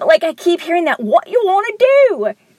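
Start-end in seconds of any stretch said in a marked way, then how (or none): 1.0-2.3 put-on Liverpool-style accent, high-pitched and slow. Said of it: "Just even in that accent".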